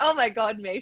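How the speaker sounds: put-on, high, cracking up mid-sentence. Retelling someone laughing in front of a judge: imitating someone laughing hard.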